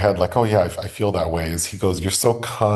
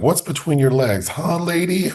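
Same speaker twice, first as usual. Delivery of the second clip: very high, shrill screaming outburst; 10 semitones higher than usual. Describing a film scene where one character screams at another, imitating the scream. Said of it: "And he's screaming".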